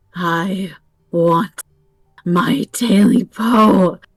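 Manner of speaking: rasping, hoarse creature croak. Reading a story, a thing in the darkness speaks: high hoarse croaking voice. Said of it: "a high, hoarse voice croaked from the darkness".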